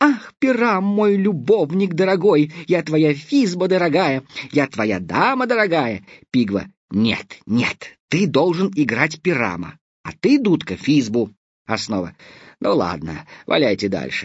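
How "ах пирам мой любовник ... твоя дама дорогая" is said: monstrously thin, tiny, squeaky voice, pitched high. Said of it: "Я могу говорить чудовищно тоненьким голосом".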